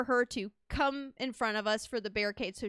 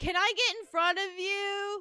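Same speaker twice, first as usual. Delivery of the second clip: put-on tipsy woman's higher-pitched, drunken yelling; 9 semitones higher than usual. Retelling how a drunk woman at a concert asked to get in front: imitating a drunk woman yelling. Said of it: "is yelling at him saying".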